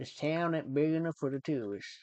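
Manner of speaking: Southern cowboy accent, like in cowboy films. The speaker shows off a Southern accent learned from cowboy films: Southern cowboy accent. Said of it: "I can do the Southern accent".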